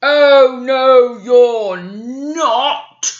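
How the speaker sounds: very slow, big hungry troll voice, not stretched. Reading the Billy Goats Gruff to a child, the Troll answering the goat, big hungry troll voice. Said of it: "said the Troll in his big hungry voice".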